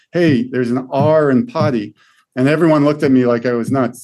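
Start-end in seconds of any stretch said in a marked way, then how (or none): 0.2-2.0 exasperated, frustrated, very slow delivery. Retelling what she said in front of her class, retelling own frustrated remark. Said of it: "really frustrated and saying".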